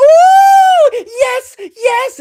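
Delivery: very high, very loud, shrill, giddy, gleeful cry. Speaker recalls the fiancée seeing a show thumbnail, imitating giddy excitement. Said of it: "she got so giddy she couldn't even control herself".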